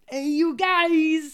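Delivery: high, loud put-on New York accent, "guys" stretched. Asked what accent it is, answering in a put-on New York-ish accent. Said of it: "Was that like New York?".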